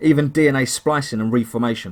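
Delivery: ordinary delivery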